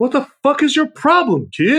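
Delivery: very high pitch swooping around. Discussing Christmas movies, a host quotes a line from the film: Bad Santa impression. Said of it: "Thank you for your Bad Santa impression".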